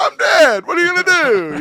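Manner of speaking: high-pitched, loud, Italian-sounding accent. Joking about getting shot dead in a game: Italian-sounding accent. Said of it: "I don't know why I sounded Italian".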